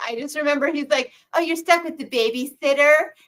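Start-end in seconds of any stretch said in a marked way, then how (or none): 1.3-2.9 put-on lisping voice. Mocking an actor's line from a horror remake: Ryan Reynolds voice with a lisp. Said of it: "He has such a lisp with his voice".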